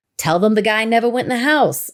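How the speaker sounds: put-on, borrowed local Boston accent. Reading out a text from a group of people, in their accent. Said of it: "I'm saying in their accent".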